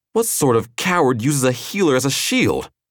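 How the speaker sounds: taunting, high-pitched, shouted delivery. A narrator reads the man striding toward Killian: shouted. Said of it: "He shouted".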